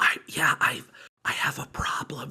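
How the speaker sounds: slow, soft, halting whisper. Imitating a caller on a phone line: imitating someone whispering. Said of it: "they just start whispering by sort of reaction".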